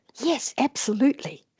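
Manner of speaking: eager, wholehearted, very enthusiastic tone. Teaching degrees of agreement, the speaker demonstrates the strongest: very enthusiastic agreement. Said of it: "The more agreement, the more enthusiastic. You can hear it in the way I say it".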